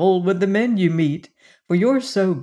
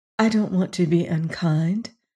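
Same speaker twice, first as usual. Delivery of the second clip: murmured, lower pitch; 3 semitones lower than usual. Lorelei, hiding her face on her mother's shoulder, speaks to her, murmured. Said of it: "she murmured".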